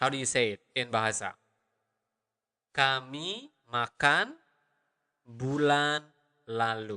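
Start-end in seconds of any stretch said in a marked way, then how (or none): 2.7-7.0 slow, careful, deliberate enunciation. Showing a learner how to say a phrase: slow careful pronunciation. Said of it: "Or the normal speed would be".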